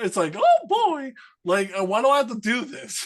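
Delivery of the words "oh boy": very high, loud cartoon voice, pitch swooping. Showing the others the voice he says he can do: Mickey Mouse voice. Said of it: "I could do Mickey Mouse".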